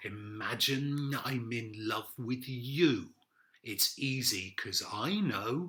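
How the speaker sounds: slow, menacing, creepy, threatening delivery. Demonstrating how a pop lyric sounds, in a threatening voice. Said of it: "say it in a threatening voice".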